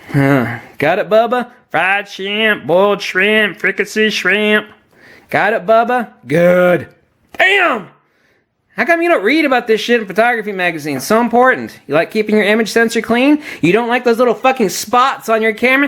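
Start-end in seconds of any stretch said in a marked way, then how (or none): 7.3-15.8 worked-up, angry, heated venting rant. Explaining how to keep the image sensor clean: angry ranting. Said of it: "That was my rant".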